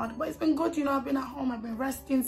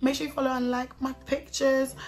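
ordinary talk, nothing marked

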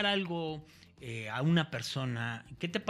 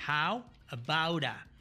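deliberately slowed, slow pronunciation of the phrase. Teaching an English phrase to Spanish speakers: slow pronunciation. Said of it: "lo voy a pronunciar despacio".

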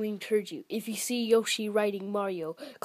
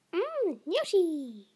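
high-pitched cartoon creature voice; 8 semitones higher than usual. Voicing a toy guest tasting a cookie: Yoshi voice. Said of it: "Yoshi will eat a cookie".

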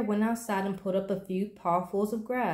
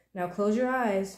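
ordinary delivery

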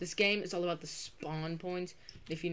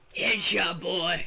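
put-on announcer voice, louder; 11 dB louder than usual. Calling out a headshot in a shooting game: Albert impression. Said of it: "I wanna do my Albert impression".

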